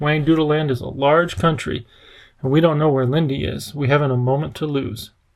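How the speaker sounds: plain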